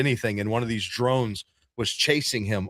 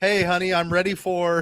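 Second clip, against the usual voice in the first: put-on robot voice, higher; 7 semitones higher than usual. Acting out a robot walking into a dinner party: acting as the robot. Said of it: "the robot just walked in".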